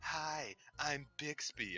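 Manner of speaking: put-on sultry assistant voice. Complaining about the phone's Bixby greeting: sultry Bixby voice. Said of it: "some sultry voice".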